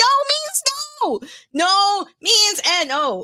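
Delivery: put-on furious shout. Retelling being pursued in a game: imitating own angry shout. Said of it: "I was so mad".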